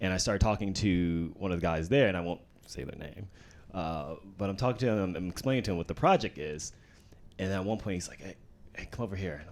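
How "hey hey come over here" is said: put-on whisper, quieter. Retelling how a man at a trailer called him over: imitating someone whispering. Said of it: "why are you whispering".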